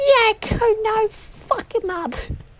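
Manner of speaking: slow, high put-on child voice.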